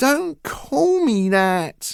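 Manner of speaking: slow, drawn-out, very high-pitched whining. Reading a story, a son protests being called names: whiny voice. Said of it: "Henry said in a whiny voice".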